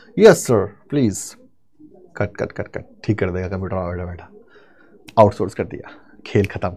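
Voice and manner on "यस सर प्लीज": put-on call-centre American accent. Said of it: "उसको आता है अमेरिकन एक्सेंट में बात करना".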